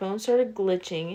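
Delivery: plain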